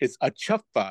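ordinary talk, nothing marked

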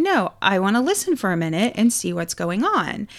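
ordinary talk

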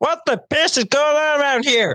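very high put-on cartoon-frog puppet voice. Quoting a basic training instructor's line, in a Kermit the Frog voice. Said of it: "he sounded like Kermit the Frog. ... I could do his voice".

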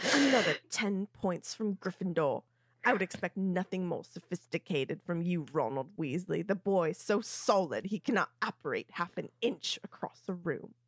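sneering, belittling, contemptuous, scornful tone. Recapping the scene, the speaker voices Snape's lines to Ron: proper Snape voice. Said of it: "shift back into my proper Snape voice".

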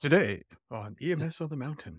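public radio announcer voice. Podcast speaker introduces their show, in an NPR voice. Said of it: "This is my NPR voice".

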